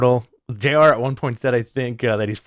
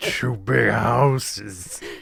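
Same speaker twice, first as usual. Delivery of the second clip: very slow, drawn-out put-on announcer voice; 4 dB quieter than usual. Repeat how J.R. said it about someone in the ring, in a very slow J.R. impression. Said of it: "That's my J R impression".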